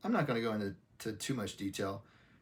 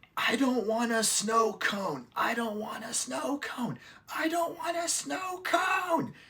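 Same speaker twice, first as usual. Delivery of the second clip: shrill, very high-pitched, rising screaming fit; 14 semitones higher, 5 dB louder than usual. Giving a made-up example of a woman screaming mid-argument, imitating someone screaming. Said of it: "just starts screaming".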